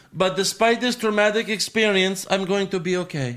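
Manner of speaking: high, heavily laid-on put-on Eastern European accent. Retelling a woman's words after her traumatic experience, in a Lady Borat accent. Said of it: "I don't know why I'm doing the accent".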